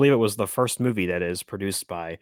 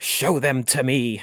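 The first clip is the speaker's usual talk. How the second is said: very slow, high-pitched, drawn-out screaming; 5 semitones higher, 3 dB louder than usual. Retelling a later movie scene where the character screams at someone: imitating Doctor Gordon screaming. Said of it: "he's screaming at somebody".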